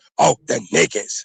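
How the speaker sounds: leaning hard, emphatic stress on the n-word. Imitating how others say a word: imitating someone saying it with emphasis. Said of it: "see how they say it, like, with emphasis".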